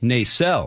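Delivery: Nacelle stressed on the second syllable. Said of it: "puts the emphasis on the second syllable".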